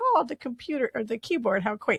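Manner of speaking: put-on Scottish accent. Retelling a Star Trek scene, quoting Scotty: Scotty's Scottish accent. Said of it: "He does in the Scottish accent".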